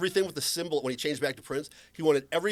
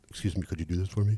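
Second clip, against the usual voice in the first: very low, deep voice; 8 semitones lower than usual. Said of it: "Like this low, deep voice".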